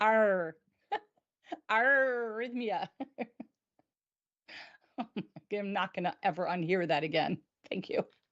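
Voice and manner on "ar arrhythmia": pirate voice, leaning on the "ar" of "arrhythmia". Showing another speaker how a pirate would say arrhythmia, pirate voice. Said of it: "that you sounded like a pirate".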